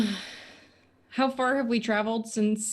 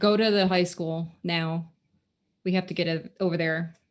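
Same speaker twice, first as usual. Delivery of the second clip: normal talking voice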